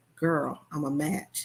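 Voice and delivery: whispering voice. Retelling telling a friend she is a match: imitating own whisper. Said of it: "and I'm whispering, whispering to my friend".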